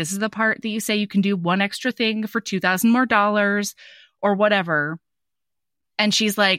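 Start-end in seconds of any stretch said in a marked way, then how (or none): none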